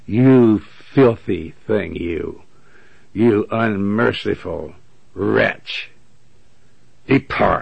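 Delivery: acted-out mocking scorn. Describing a sinner in hell being answered, acting out mocking contempt. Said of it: "He'll mock them".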